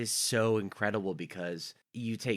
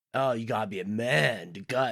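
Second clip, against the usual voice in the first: goofy dorky character voice; 4 dB louder than usual. Retelling a movie scene, quoting Stu in a dorky goofy voice. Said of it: "Stu in his super dorky, geeky, goofy way".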